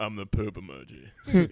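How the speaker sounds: deep, low, slow, unhurried drawling character voice. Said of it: "You guys both have a great Warburton".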